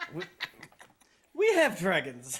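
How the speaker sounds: low, deep dragon voice. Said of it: "Terramon does not like it when you do his voice".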